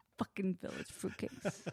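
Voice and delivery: mock-menacing mutter under breath. Retelling someone muttering an insult meant to be overheard, imitating a menacing mutter. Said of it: "Like menacingly, like under his breath".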